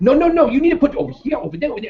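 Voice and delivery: very high, frantic, going-nuts voice, acted out. Recounting store staff going nuts at shoppers with carts, imitating frantic staff. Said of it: "they're just like going nuts".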